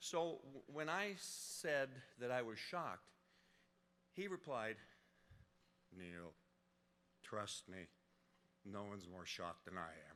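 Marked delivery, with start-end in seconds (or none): 6.0-10.1 low, flat, non-expressive mock deadpan monotone. Retelling a colleague's reply about the award: John's very flat, dry voice. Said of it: "channel his very flat, dry, non-expressive voice".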